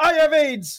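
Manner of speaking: high-pitched shout, belted out. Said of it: "so this, it's shouting it".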